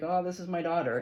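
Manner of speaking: put-on heavy Boston accent, laid on thick. Retelling what a young guy on Instagram says about his cat: imitating thick Boston accent. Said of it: "in his, like, thick Boston accent".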